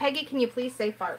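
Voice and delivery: ordinary talk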